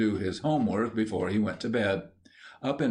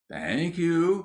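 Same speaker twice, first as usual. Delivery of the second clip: meek, long-suffering, small, high, martyred voice; 8 semitones higher than usual. Reading a story where a character thanks her again in a small, martyred voice. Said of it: "in a small, martyred voice".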